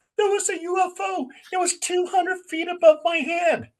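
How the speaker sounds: acted, very high, hysterical panicked outburst. Retelling their girlfriend coming into the apartment screaming, mock-hysterical Helen Lang. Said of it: "she's all hysterical".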